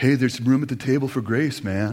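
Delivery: silky smooth, velvety, easy voice. Retelling the voice you heard in your ear while revving up in anger, silky smooth Kyle impersonation. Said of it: "Kyle's like silky smooth voice".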